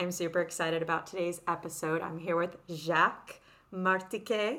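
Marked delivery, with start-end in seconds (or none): 2.0-4.6 put-on French pronunciation of a name. Introducing a guest by name, trying to sound french. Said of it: "totally trying to make it sound French".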